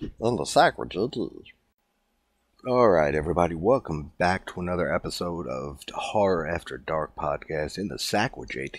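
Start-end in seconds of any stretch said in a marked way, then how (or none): 0.2-1.5 high-pitched, pitched-up cartoon character voice. Host opens the podcast episode in Meatwad voice. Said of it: "that is me doing Meatwad's voice".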